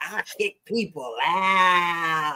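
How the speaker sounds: very deep, very slow, with "out" stretched long. Joking about what was heard from the other speaker: Martin Lawrence voice. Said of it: "in my best Martin Lawrence voice".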